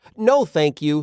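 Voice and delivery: ordinary delivery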